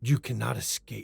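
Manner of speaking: whispering. A game master narrates a voice the players hear while heading back: whispering. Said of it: "you hear a voice whisper".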